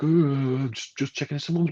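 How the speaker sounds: high-pitched, mocking, whiny delivery.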